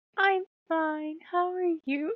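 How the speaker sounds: high, sugary, saccharine voice. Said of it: "sweet, nice couples that talks like this".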